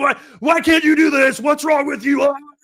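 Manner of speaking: high, loud drill sergeant screaming. Recalling what happens when someone fails inventory day: imitating McElroy screaming. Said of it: "he's screaming".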